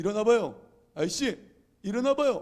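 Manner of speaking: high-pitched loud calling.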